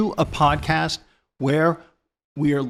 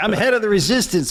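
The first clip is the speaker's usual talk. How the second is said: put-on Brooklyn accent throughout, pitched up; 5 semitones higher, 3 dB louder than usual. Talking about a French resistance character, doing a Brooklyn accent impression.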